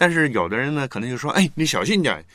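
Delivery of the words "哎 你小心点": high, stern, harsh tone. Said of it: "那个语气就比较凶严啊".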